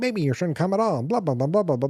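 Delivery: high, nagging woman's voice. Retelling the ex-wife's phone calls in the movie: imitating a nagging woman on phone. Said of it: "you just hear this voice the whole time".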